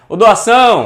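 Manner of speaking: high, loud call of doação, stressing ção.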